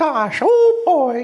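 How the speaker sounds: voice going way up into falsetto. Speaker demonstrates the Disney voices they can do; half-ass Mickey falsetto. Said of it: "if you can do that falsetto".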